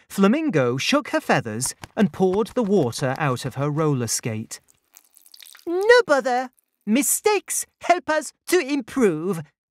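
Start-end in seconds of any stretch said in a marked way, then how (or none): 5.6-9.4 chirped, very high-pitched delivery. Narrator voices the flamingo shrugging off a failed raft attempt, chirped. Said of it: "she chirped".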